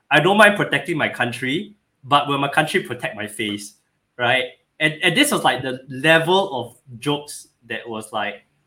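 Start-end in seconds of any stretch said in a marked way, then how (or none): none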